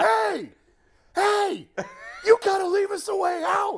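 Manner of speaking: mock shrill, very high, drawn-out angry holler. Telling a story about yelling at a traffic cop, retelling a yell. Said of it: "Do not ignore me when I'm yelling".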